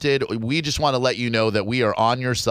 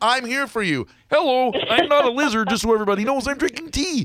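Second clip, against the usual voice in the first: very high cartoon frog puppet voice; 12 semitones higher than usual. Offering a caller character voices for phone sex: Kermit the Frog voice. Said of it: "phone sex with Kermit the Frog".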